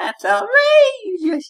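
pitch climbing very high and loud at the end. Showing the group how the buzzword should be said, higher pitch at the end. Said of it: "say it with a slightly higher pitched voice at the end".

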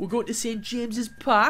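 clumsy, off-target, bad put-on Geordie accent. Announcing the next simulated match, away at Newcastle, in a bad Geordie accent. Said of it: "That was the worst Geordie accent I could have done".

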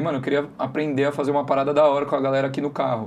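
normal talking voice

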